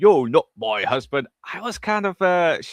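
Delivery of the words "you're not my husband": exaggerated fake British accent. Recalling a woman's performance, quoting her line in a put-on british accent. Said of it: "when she started doing the British accent".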